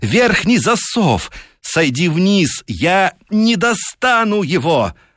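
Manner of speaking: strained, breathless, loud, high, drawn-out shouting. Narrator reading a woman calling to her husband, shouting loudly. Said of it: "закричала она громко".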